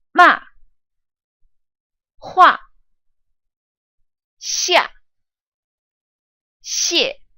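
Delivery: sharp falling fourth tone on ma, hua, xia, xie. Practicing fourth-tone syllables together with the listener: quickly falling tone. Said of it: "let's practice these fourth tone syllables together".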